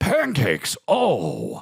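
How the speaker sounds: swooping pitch outburst with a drawn-out oh. Describing Al Pacino in recent movies, ad-libbing: Al Pacino impression. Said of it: "if Al Pacino's in a movie, he's like".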